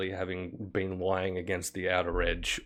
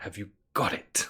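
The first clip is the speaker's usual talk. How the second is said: sharp hiss through clenched, gritted teeth. Game master voicing a woman who turns to the player's side, hissing through teeth. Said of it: "she hisses through her teeth".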